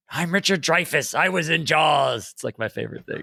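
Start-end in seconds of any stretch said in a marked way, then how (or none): 0.1-2.3 slow, deliberate, measured voice. Retelling an impression of an actor auditioning: Richard Dreyfuss impression. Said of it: "someone doing a Dreyfuss impression".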